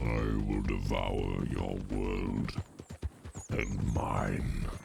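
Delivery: very low, deep, rough monstrous growl. As the player's character becomes the World Eater, speak in a deep World Eater voice. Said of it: "the World Eater voice because it doesn't sound as deep".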